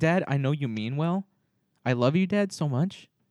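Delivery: mock affectionate child voice. Retelling how a kid answers a well-meaning dad: imitating a kid talking to dad. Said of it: "it's like".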